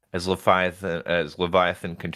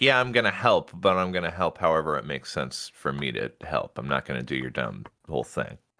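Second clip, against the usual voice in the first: plain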